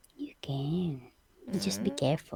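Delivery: soft, unvoiced whispered aside.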